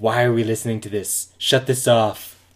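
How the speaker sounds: blustering politician-style delivery. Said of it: "it's [name]".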